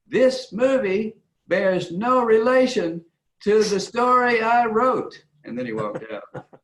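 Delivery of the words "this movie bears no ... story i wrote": very high-pitched voice, words drawn out slowly. Retelling what the writer told the audience, imitating his high-pitched voice. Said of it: "in that sort of high-pitched voice of his".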